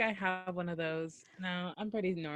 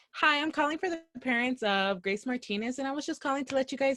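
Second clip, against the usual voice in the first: mock very nice, very sweet, pitched-up voice; 6 semitones higher than usual. Acting out phoning a child's parents, in a very nice, sweet phone voice. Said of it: "It's just very nice and very sweet".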